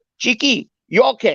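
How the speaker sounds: put-on heavy Chinese accent. Retelling how Johnny came in and greeted the speaker, Johnny's strong Chinese accent. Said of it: "he had that real Chinese accent".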